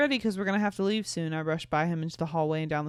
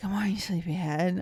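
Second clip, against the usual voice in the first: hushed whisper. Reading a story aloud, the narrator waking a sleepyhead, whispering. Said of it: "I whispered".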